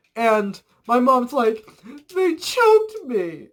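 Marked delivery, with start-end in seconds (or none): 2.1-3.3 put-on very high, tearful sobbing voice. Retelling a sobbing mother's words to the grandmother: imitating a sad sobbing voice. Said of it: "I'm not good at doing sad people voices".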